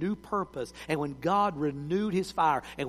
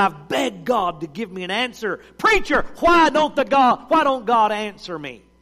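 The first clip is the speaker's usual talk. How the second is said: very loud, high, ranting shout; 5 semitones higher, 9 dB louder than usual. Retelling a young man pleading with the preacher: imitating a raised voice. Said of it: "he just raised his voice".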